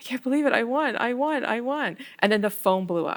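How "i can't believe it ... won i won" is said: mock tearful, weepy, high crying with disbelief. Retelling being asked why they were crying after winning, retelling own crying. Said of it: ""Why are you crying?"".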